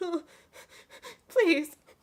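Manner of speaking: very high, a little weepy, tearful crying. Storyteller voicing a dwarf who was just slapped, crying a little. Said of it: "he's kind of crying a little bit".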